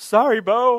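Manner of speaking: loud high shouting. Retelling running back and slamming the gate on Bo, retelling a yell. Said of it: "and I yelled".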